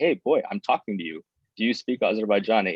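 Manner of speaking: play-acted angry, fed-up demanding tone. Retelling how a man at the dentist demanded an answer: imitating an angry man. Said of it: "finally he gets mad and he's like".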